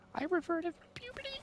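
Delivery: very high, squeaky, frightened voice. Acting out a scared boyfriend facing the dad: imitating a scared high voice. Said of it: "your voice starts to get high again".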